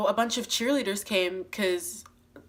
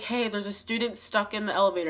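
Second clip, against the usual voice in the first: ordinary talk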